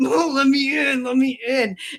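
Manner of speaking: mock high-pitched, babyish whine. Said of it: "Prince was whining".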